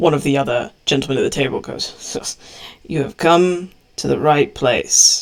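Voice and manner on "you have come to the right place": a bit of dry sarcasm. A gentleman at the table answers visitors seeking a chieftain, with dry sarcasm. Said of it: "Piping up in a bit of dry sarcasm".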